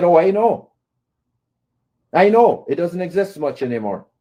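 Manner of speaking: ordinary delivery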